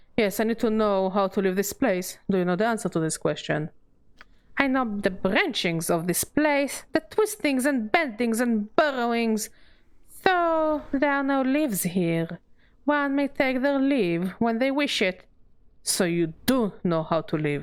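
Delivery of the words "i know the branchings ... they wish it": high, serpent-like hissing witch voice. An ancient witch in a game answers a traveler's question about leaving her maze, speaking in riddles; hissing, serpentine. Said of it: "A question posed to a witch. / Avel picks at one of her jagged grey hairs, / No more will I say, / [name]'s voice drops as a low hiss, / [name]'s voice drops as a low hiss, like that of a serpent".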